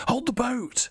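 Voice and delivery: hoarse rasp, very high. Game master voicing a man calling from the smoke-shrouded street, raspy voice. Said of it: "A voice rasps".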